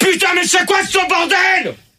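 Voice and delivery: angry yelling. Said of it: "Putain, gueule pas".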